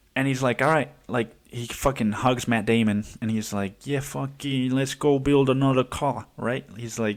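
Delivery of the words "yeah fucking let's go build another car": put-on accidental slip into an Italian accent. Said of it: "he's not an Italian. I don't know why".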